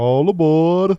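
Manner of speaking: slow, loud, drawn-out conductor-style call.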